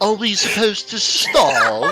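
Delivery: put-on British accent. Repeating another player's line in a mock British accent. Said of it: "Why did you sound British?".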